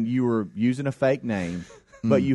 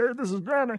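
very high, squeaky frog-puppet voice; 11 semitones higher than usual. Trying out ways to say his name, the speaker goes Kermit the Frog voice. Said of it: "then it's Kermit the Frog".

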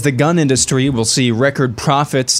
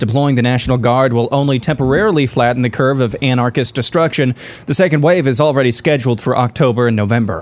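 plain

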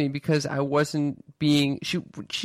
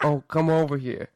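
put-on New York accent. Retelling getting uncomfortable and slipping into a new york accent. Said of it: "I started talking in like a New York accent".

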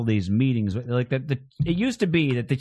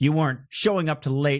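ordinary talk, nothing marked

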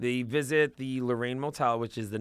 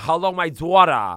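put-on angry New York accent, higher and louder; 5 semitones higher, 9 dB louder than usual. Imitating Evelyn scolding Jen about her daughter: imitating Evelyn's angry New York accent. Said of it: "their real New York accent comes out, they're angry".

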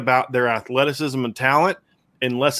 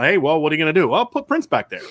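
mocking, sarcastic, swooping sing-song delivery; 2 semitones higher than usual. Acting out an imagined exchange about a player: sarcastic. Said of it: "I say sarcastically".

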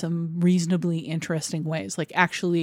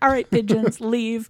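high, loud, hollered yelling; 5 semitones higher, 4 dB louder than usual. Retelling a film scene of yelling at pigeons: imitating May Whitty yelling. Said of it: "she's yelling, like".

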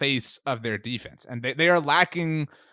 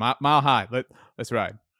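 put-on sincere football player voice. Doing the Russell Wilson impersonation after being called a coward: Russell Wilson impersonation. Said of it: "I did not do the impersonation".

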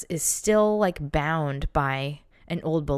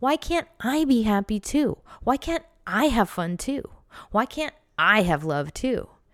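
put-on little kid voice, higher pitch, slower. Speaker demonstrates a little kid complaining to a grown-up, little kid's voice. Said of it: "it would be like in this little kid's voice".

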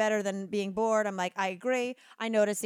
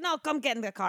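thick put-on Eastern European accent; 4 semitones higher than usual. Retelling what a man who pulled up in his car told her: thick Eastern European accent. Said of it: "a very thick Eastern European accent".

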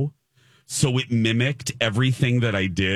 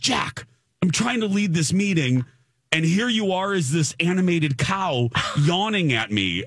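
put-on, playfully annoyed, joking anger, higher pitch; 7 semitones higher than usual. The speaker acts out the meeting leader scolding them, mock-mad, retelling. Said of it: "He's so jokingly mad at me".

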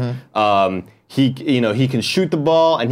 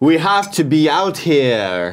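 very slow delivery with "here" long and drawn out; 4 semitones higher than usual.

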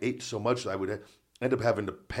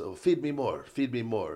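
put-on Italian accent. Retelling what the cook said, imitating the cook, Italian-sounding accent. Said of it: "you sound like he's, like, an Italian guy?".

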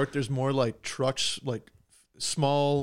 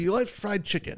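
put-on Western New York accent, pitched up; 6 semitones higher than usual. Imitating uncles from western new york: western new york accent. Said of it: "it sounds like every uncle that I have".

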